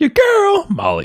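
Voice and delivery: very high, scratchy squeak of a voice. Testing a high voice on her intro line as a co-host listens: high scratchy voice. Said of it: "Still scratchy".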